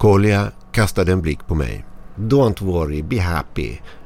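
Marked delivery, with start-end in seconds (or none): 2.1-3.8 exaggerated, cartoonish mock Russian accent. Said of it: "ropade han med parodisk rysk brytning".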